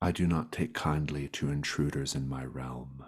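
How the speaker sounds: menacing voice of an unseen predatory creature. Voicing an unseen creature that is taunting intruders in a dark cavern: predatory unseen creature voice. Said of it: "you hear a voice in the inky blackness".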